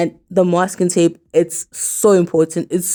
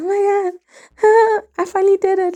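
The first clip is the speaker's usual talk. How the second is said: very high schoolgirl giggling with excitement; 14 semitones higher than usual. Recalling finally finishing a project, the speaker retells giggling like a schoolgirl. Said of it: "I was like giggling like a schoolgirl".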